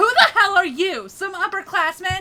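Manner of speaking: mean, angry, bitchy tone, loud and high. Showing how to say the line when asked: angry bitchy tone. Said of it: "Gotta say it in angry tone".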